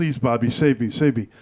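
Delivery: mock, begging, pleading voice. Retelling a politician running to a congressman like a supplicant: imitating Lightfoot begging. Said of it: "like a supplicant, holding his knees like".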